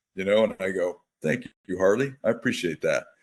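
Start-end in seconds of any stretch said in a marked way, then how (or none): none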